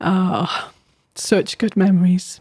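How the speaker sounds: slow, cracking voice breaking up with feeling. Closing an episode after recalling a dear friend, the host speaks, voice cracking with emotion. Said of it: "you can probably hear I'm just starting to crack".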